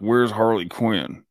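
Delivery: soldier voice spoken with lips kept completely still. Showing off an impression, the speaker talks as Rick Flag without moving lips. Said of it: "he doesn't move his mouth when he talks".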